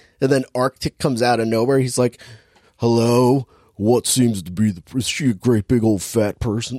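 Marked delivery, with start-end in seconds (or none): 2.8-6.8 put-on creepy killer voice. Retelling a movie scene, getting into a Buffalo Bill voice. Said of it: "that's how I get into my Buffalo Bill".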